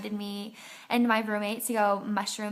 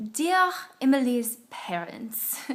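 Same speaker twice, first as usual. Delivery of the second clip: over-the-top, fake, sing-song French accent; 2 semitones higher than usual. Acting out his fake letter to my parents, bad exaggerated French accent. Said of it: "it's a bad French accent".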